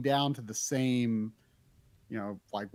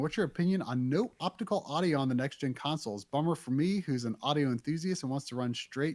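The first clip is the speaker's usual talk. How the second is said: ordinary talk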